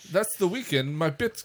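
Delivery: high, fake Canadian accent drifting into Jamaican. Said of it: "That went Jamaican".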